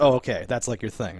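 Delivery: ordinary delivery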